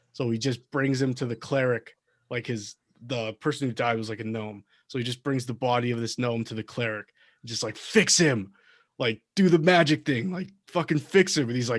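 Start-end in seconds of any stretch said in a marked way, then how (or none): 7.8-11.5 mock crying, loud, tearful, begging tone. Retelling a barbarian bringing a dead gnome to the cleric: imitating a crying plea. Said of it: "he's, like, crying and stuff".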